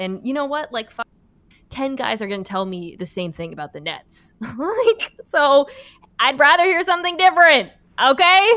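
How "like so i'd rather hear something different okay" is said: high, loud sassy voice. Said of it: "I don't know what that voice was".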